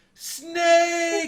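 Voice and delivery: put-on very high, loud, long drawn-out shrill scream. Doing game character impressions with friends: Otacon screaming Snake. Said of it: "screams Snake's name when he dies".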